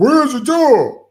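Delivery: high, drawn-out, losing-it scream. Speaker describing a movie trailer, imitating Superman screaming at Lex. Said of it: "Then he's screaming at Lex".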